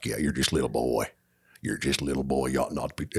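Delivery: character voice dropped down low. Showing the others a Sling Blade impression: Sling Blade voice. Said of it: "I haven't done Sling Blade forever".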